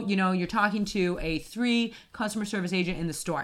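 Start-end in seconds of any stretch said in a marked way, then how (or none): none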